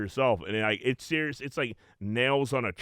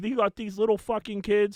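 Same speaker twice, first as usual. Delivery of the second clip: play-acted, very high-pitched screaming; 11 semitones higher than usual. Retelling what a friend's mom screamed at the cops: imitating someone screaming. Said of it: "She's screaming at the cops".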